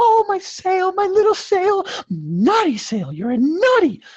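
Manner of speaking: giddy, very high, drawn-out, swooping sing-song. Mocking someone giddy over a small sale: imitating Tommy Boy excited over sale. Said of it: "like Tommy Boy there when he's so excited".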